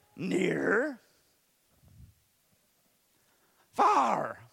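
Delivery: swooping puppet voice, rough and creaky. Retelling a puppet teaching near and far: Grover voice. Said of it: "that's gonna mess with my voice".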